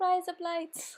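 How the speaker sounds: Australian accent on every word. Showing viewers a joke phrase said in an Australian accent. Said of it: "in Australian accent".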